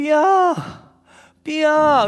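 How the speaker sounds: very high, desperate, pleading calling voice. Recalling being home alone and hearing a voice call out: imitating 승유 desperately calling 삐야. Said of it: "되게 간절한 간절한 목소리가".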